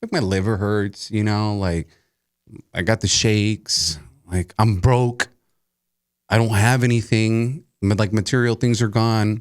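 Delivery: ordinary delivery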